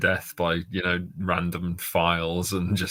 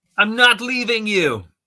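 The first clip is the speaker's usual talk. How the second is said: very loud, shrill, high-pitched shouting; 8 dB louder than usual. Narrating a fight with a Wampa, the hero refuses to leave, shouting. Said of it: "You shout".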